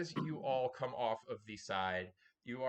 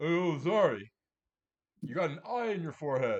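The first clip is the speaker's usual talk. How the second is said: very loud, booming, belted movie-star voice; 4 semitones higher, 8 dB louder than usual. Voicing a dog that speaks to Zari: Sylvester Stallone voice. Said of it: "you hear in a Sylvester Stallone voice".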